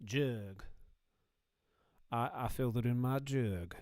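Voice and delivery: put-on slow Southern American drawl. Joking about the word jug, speaker imitates a Southern man saying it. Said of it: "southern man being like saying the word jug".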